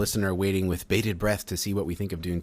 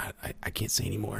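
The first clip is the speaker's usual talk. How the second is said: imitated whisper, quieter; 2 semitones higher, 6 dB quieter than usual. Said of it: ""Why are you whispering?"".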